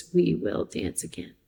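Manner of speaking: put-on tiny, tear-filled little voice. Recalling a woman's last words on stage, imitating a tiny tearful voice. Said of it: "her little tiny voice that was like flooded with tears".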